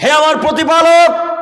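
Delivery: weeping, pleading voice.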